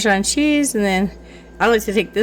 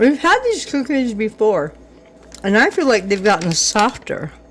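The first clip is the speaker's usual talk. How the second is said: talking with mouthful of food, slower. Eating cookies while chatting, talking with food in mouth. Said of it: "I can talk with food in my mouth".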